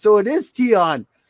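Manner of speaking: triumphant, high, loud, slow gotcha.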